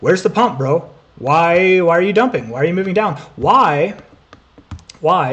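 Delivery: heated, worked-up, frustrated tone. Talking about the Caspa exchange listing, getting a little heated. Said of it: "I'm sorry I'm getting a little heated".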